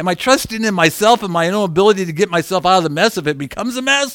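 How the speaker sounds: talking too fast, rushed rambling.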